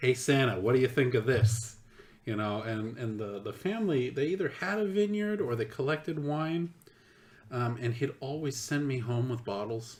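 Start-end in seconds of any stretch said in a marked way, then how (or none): 0.0-1.8 put-on loud, heavy New York accent, laid on thick. Retelling a man asking him questions while he played Santa: thick New York accent. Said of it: "in this thick New York accent".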